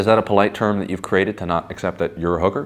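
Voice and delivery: ordinary talk, nothing marked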